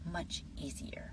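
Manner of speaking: soft unvoiced whisper.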